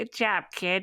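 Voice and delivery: put-on elderly man's voice. Voicing a fur baby on the shoulder speaking into your ear: old man voice. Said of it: "I'm trying to sound like an old man".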